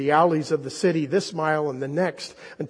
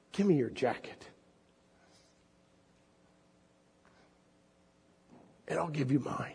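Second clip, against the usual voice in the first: soft, quick voice with quiet authority; 10 dB quieter than usual. The ragman addresses a one-armed man, with quiet authority. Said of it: "Such quiet authority in his voice".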